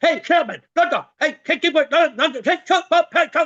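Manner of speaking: furious, barked, high-pitched angry shouting. Showing the listeners how an angry person sounds, angry shouting. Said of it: "Suppose I'm like this".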